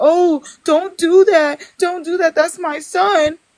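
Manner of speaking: high, drawn-out, pleading protesting shout. Retelling how the other person reacted when her son got roasted: imitating someone yelling. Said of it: "then you wanted to yell and be like".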